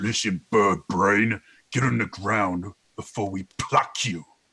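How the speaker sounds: deep, dropped voice of a hulking giant. A game master voices a figure speaking from behind the players, in a really deep voice. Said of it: "You hear a really deep voice".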